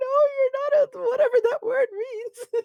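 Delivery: very high, slow, teary voice, crying a little. Voicing a character answering while crying a little: voicing character crying a little. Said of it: "crying a little".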